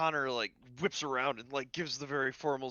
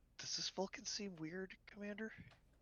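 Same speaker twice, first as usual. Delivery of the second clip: very quiet, high, hushed whisper; 7 semitones higher, 12 dB quieter than usual. Connor leans over to the commander during a game scene, whispering. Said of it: "as you two whisper back and forth".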